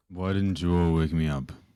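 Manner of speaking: low just-woken-up voice. Game master voices Abaddon stumbling into the room; Abaddon's low just-woken-up voice. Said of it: "with his low, just woken up voice".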